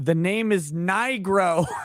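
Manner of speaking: exasperated, very slow. Retelling how his dad corrected a nurse: imitating an exasperated dad. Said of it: "He exasperatedly says".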